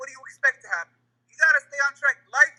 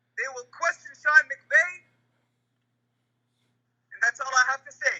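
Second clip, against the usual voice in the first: preaching, sermon-like cadence. Finishing a point, with a sermon-like cadence. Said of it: "you sound like you're giving a khutbah".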